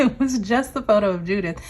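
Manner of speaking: speaking through laughter. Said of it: "I'm laughing".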